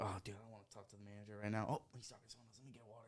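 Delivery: soft, fast muttering under the breath.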